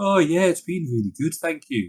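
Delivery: put-on gloomy Wolverhampton accent. Imitating a man from university who always sounded sad: mock-sad, depressing dialect. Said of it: "he just sounded like really sad all the time".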